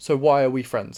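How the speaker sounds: usual speaking voice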